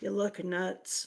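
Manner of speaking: very quiet, soft, muttered under the breath. Retelling what the dad said under his breath: imitating someone speaking very quietly. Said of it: "said very quietly".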